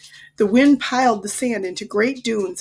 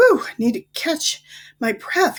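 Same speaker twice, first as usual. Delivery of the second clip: breathless panting, gasping between breaths, pitched up; 6 semitones higher than usual. Narrator reads a child's line after running halfway across a dune, out of breath. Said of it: "managed to say between breaths".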